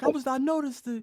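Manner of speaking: put-on slight Bahamian accent, very high-pitched, slow. Imitating a fellow comedian noticing something, slight Bahamian accent. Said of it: "His, his slight, slight Bahamian accent".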